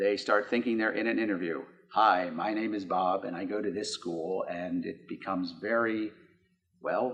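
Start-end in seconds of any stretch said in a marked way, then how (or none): 1.9-4.5 mock robotic monotone, lower pitch. Imitating a student at an interview in robot mode: imitating a robotic student voice. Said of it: "they go into robot mode".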